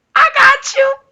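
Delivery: voice jumping very high. Retelling their own excited reply, speak with a voice that gets very high. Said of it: "my voice would get very high".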